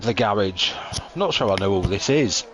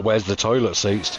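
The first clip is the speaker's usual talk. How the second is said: ordinary talk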